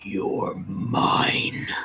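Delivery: low gravelly voice. Narrator voices a voice piercing the players' minds: gravelly and low. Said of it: "gravelly and low".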